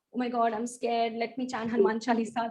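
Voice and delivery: ordinary talk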